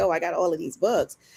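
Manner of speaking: plain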